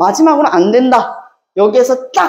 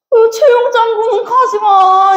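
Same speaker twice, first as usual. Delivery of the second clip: put-on crying voice, higher; 9 semitones higher than usual. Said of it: "우왕이 우왕 하고 울어버리는 거야".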